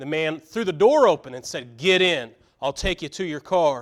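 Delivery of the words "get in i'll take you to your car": firm, stern, commanding tone. Retelling what a man in a car told Bill, retelling a stern order. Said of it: "in a stern voice".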